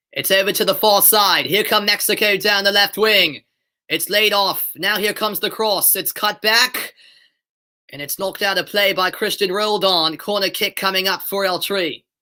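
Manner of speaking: British accent slipping toward American. Commentating a match after being asked to: attempted British accent. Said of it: "I can talk in a decent British accent".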